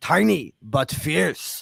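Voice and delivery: slow, creaky voice with Russian accent.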